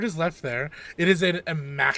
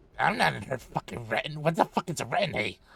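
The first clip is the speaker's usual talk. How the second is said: rude imp voice, much quieter; 4 dB quieter than usual. Voicing an NPC imp when asked if it belongs to the lady's retinue: rude imp voice. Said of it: "a rude imp".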